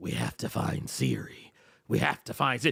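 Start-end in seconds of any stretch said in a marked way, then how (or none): 0.0-1.4 gruff, flat delivery. Joking about a game's search for a missing character, Geralt voice. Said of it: "in the voice of Geralt".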